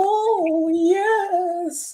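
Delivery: "yes" pitched very high and stretched out. Picturing being pinned while Paul Bearer exults: Paul Bearer impression. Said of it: "that's a great impersonation of Paul Bearer".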